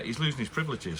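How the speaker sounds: plain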